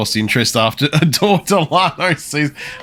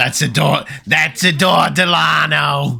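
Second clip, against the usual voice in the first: put-on old lady voice, pitched higher; 4 semitones higher than usual.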